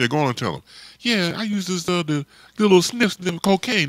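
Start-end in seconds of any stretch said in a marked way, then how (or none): 1.0-3.9 high, put-on pimp character voice. Retelling what a man with a long nail told him: high voice imitating him. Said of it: "spoke in a high voice".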